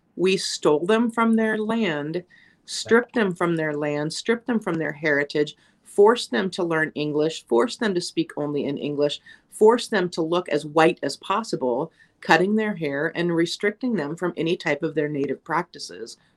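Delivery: ordinary talk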